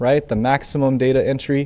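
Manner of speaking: ordinary talk, nothing marked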